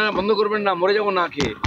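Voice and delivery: ordinary talk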